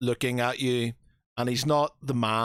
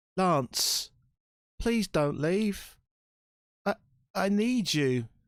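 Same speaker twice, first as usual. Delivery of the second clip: crying and begging, high, slow and tearful; 8 semitones higher than usual. Roleplaying a boy prince begging lance not to leave, tearful pleading. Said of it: "you can see tears coming from his eyes".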